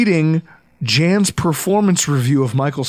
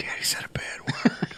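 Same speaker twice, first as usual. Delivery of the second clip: put-on hushed, soft little-kid whisper. Retelling what his son says after a swear word: imitating his son whispering. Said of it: "He just kinda whispers".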